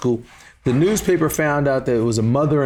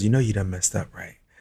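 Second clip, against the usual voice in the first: quiet, soft, hushed stage whisper; 6 semitones lower, 5 dB quieter than usual. Retelling what Mom said after walking across the room: imitating a half-whisper. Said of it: "she whispers".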